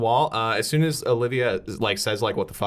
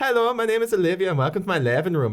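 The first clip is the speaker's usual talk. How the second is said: put-on Irish accent, pitched up; 9 semitones higher than usual. Retelling an accent tutorial video's opening line: imitating an irish accent video. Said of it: "how to sound like Scottish or Irish".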